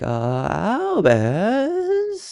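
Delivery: shaky, very high, nervous voice. Imitating the actor who plays Scorpius: imitating nervous Scorpius voice. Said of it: "he was a very nervous individual".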